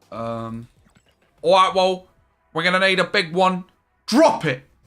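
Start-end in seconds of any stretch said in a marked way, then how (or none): 1.4-3.6 north London accent. Answering a request to do one: north london accent. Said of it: "Do a North and London one".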